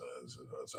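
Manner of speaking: low, soft, lazy mumbling. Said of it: "I start talking like this".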